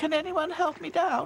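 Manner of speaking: tiny, very high-pitched, small voice. Narrator reads Dotty asking for help down from the tree, in a small voice. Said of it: "Asked Dotty in a small voice".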